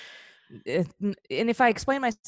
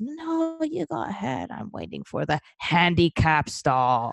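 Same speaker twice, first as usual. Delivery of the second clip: put-on slow, frail elderly woman's voice. Retelling a woman in line declining a restroom stall, frail old lady voice. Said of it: "has like a frail old lady voice says".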